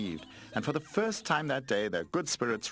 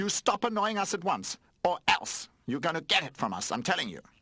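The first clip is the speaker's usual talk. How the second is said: scolding in a high-pitched voice; 8 semitones higher than usual. Reading a story, a toy warns the new toy: scolding. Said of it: "Skateboard started scolding".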